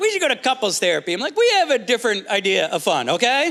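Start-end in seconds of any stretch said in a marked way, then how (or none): 0.0-1.1 mock upbeat, breezy, cheerful. Acting out how she said it: imitating someone making it sound fun. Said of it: "She said it like it was gonna be fun".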